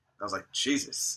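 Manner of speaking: plain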